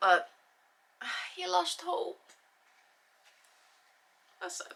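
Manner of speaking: tearful voice. Retelling a rescue story and reading the accounts: getting weepy. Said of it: "I know I'm getting weepy".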